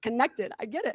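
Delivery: tearful, voice wet with crying, words through tears. Addressed as lady, answering someone who wants to help her, crying. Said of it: "I'm crying because I'm I got it".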